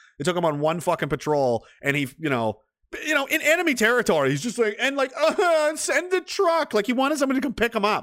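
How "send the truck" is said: very high, pleading, whining voice. Retelling what a useless man said on patrol at night, imitating someone whining. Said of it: "whining like a bitch".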